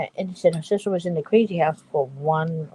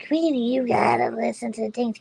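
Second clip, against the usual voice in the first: squeaky, high-pitched put-on Boston accent; 7 semitones higher than usual. Retelling what a woman would say to her, in Linda's squeaky Boston voice. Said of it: "She has a squeaky voice, like she was from Boston".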